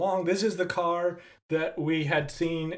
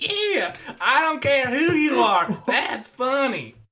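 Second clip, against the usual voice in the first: put-on Southern comic voice, higher and louder; 8 semitones higher, 6 dB louder than usual. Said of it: "impression of Larry the Cable Guy".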